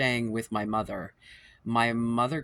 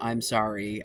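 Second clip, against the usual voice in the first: put-on tearful crying voice. Retelling her mother's reply after confronting her, imitating her mother crying. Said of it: "crying and saying".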